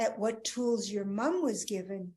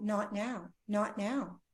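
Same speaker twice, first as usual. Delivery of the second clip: slow, tearful, pleading crying out. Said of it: "she was just crying out".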